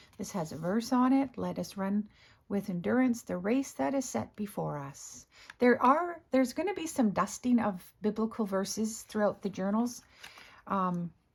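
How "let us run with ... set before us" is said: ordinary delivery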